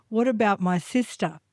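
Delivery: normal talking voice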